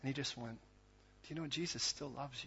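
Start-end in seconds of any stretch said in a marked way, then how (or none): 1.2-2.5 mock-calm child voice, much quieter. Retelling a kid's reply to a woman who was freaking out, imitating a calm kid. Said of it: "this kid kept his composure".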